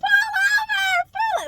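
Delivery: acted-out, very high words broken by laughter. Retelling telling the driver to pull over: imitating own laughing speech. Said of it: "laughing so hard".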